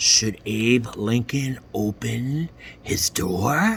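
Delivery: soft, eerie, spooky storytelling voice. Reading a character's question in a story, in a spooky voice. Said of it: "in a spooky voice".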